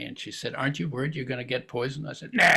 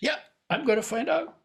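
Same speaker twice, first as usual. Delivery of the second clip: tiny, smug, cocky voice, very high; 12 semitones higher than usual. Recalling being six and hearing adults argue, quoting an inner voice: mimicking a cocky inner voice. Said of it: "this little cocky voice says".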